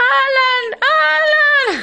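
very high, shrill, squeaky little voice, drawn out. Speaker reenacts calling out to someone who came close, in a horrible squeaky voice. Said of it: "Con una voz de pito horrible".

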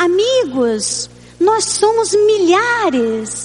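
play-acted very slow, wide-eyed, earnest, naive joy. Recalling words spoken at the first convention in Brazil, reenacting naive excitement. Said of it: "de uma maneira assim muito ingênua e cheia de emoções, cheia de animação".

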